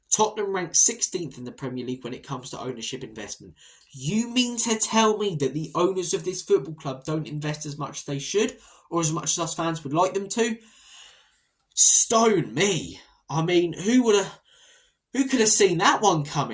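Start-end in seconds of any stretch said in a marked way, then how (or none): 3.9-16.5 loud, sarcastic, feigned astonishment. Reacting to news about the club's owners' investment ranking: sarcastic fake shock. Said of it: "I'm being sarcastic".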